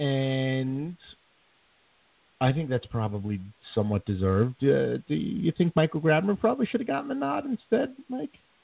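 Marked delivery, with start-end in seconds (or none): 4.6-8.4 very high pitch climbing ever higher. Talking Rangers hockey, asking Mike about an All-Star pick, Family Guy rising-pitch question. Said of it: "As my voice gets higher and higher as I ask the question".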